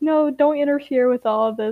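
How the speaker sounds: ordinary delivery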